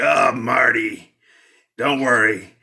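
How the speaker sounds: husky, smoke-worn cigarette voice. Retelling a film plot, the speaker voices the hero's mother in a husky cigarette voice. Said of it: "this husky cigarette voice like".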